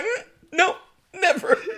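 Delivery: very high, soft, guilty, sheepish squeak. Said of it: "Kara's like".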